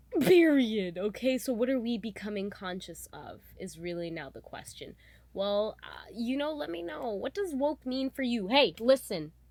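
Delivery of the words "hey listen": raised attention-grabbing shout. Speaker asking a listener how they define woke, yelling. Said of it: "Sorry for yelling".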